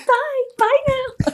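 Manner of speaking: very high, sweet American fairy voice. Retelling doing a voiceover for a Christmas fairy, in Sparkle fairy voice, American accent. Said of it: "putting on a really good fairy American accent".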